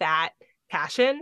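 plain

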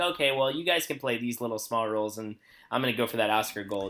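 ordinary talk, nothing marked

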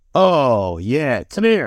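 put-on slow, chesty, barrel-chested old-school manly voice. Describing an old-school man's man, imitating his barrel-chested voice. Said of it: "big barrel chested voice. And when he talks down here like this".

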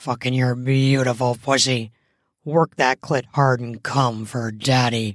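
grunting delivery. Reading an erotic story, the narrator voices the man's line, grunting. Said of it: "he grunted as he fucked her".

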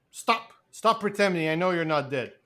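plain

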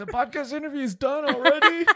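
put-on high, soft, laughing, whining child voice.

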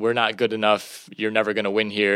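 ordinary talk

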